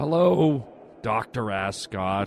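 sarcastic, grudging, cynical tone. Greeting the psychiatrist the second time after a sigh: cynical greeting. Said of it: "I detected some cynicism in your voice".

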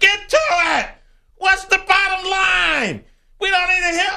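very high, screechy, shrill shouting. Retelling a lady at the airport yelling at the captain, imitating a lady yelling. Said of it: "the lady just started yelling".

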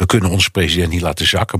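ordinary delivery

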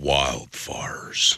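breathy whisper reaching for a deep pitch. Trying again to get the deep voice: Sam Elliott voice. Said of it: "I don't even know if I can get mine".

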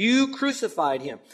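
heavy stress on "you", said slowly. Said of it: "Now underline the word "you" again".

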